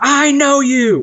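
very high, all-out, top-of-lungs yell. Retelling a man getting out of his car and pointing, retelling a top-of-lungs yell. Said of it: "at the top of his lungs".

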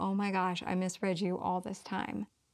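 usual speaking voice

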